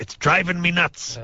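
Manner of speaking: very high, put-on cartoon pirate voice. Telling a joke, giving the pirate's punchline to the bartender, in pirate voice. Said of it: "the pirate voice is nicer".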